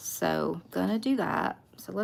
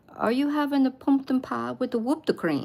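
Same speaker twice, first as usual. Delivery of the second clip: put-on strong Japanese accent, higher pitched; 5 semitones higher, 4 dB louder than usual. Retelling what the mother-in-law asked at Christmas: imitating Tommy's strong Japanese accent. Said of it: "she really still had this very strong accent".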